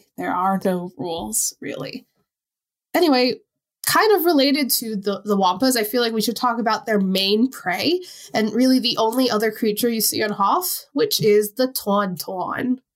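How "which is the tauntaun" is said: "tauntaun" said in a Long Island accent. Discussing the only other creature seen on Hoth, Long Island accent slipping out. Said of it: "my actual Long Island accent really comes out when I say that".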